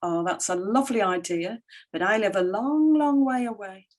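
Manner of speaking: acted, falsely polite, patronizing and condescending. Retelling own reply to someone in a bar: imitating own patronizing tone. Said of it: "I very patronizingly said".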